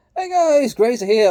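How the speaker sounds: voice jumping suddenly very high and loud. Greeting viewers at the start of a video: voice suddenly going high. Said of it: "my voice just went really high".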